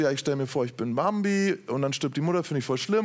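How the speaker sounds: ordinary talk, nothing marked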